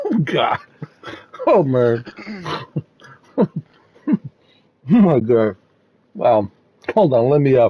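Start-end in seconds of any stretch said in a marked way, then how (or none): 0.0-6.5 very drawn-out, slow, helpless crying laughter. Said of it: "I'm crying".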